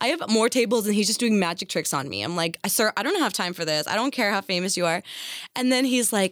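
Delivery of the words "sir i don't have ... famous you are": plain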